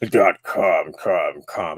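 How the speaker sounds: very low, very slow movie-trailer announcer voice. Show host during an advertising plug, in a movie trailer voice. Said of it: "I turned to movie voice guy today".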